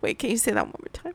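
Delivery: giggling through words. Asking the other speaker to repeat a name, laughing while talking. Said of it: "my wife who can't keep it together".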